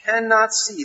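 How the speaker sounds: hard stress on cannot with a falling tune.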